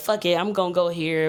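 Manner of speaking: ordinary talk, nothing marked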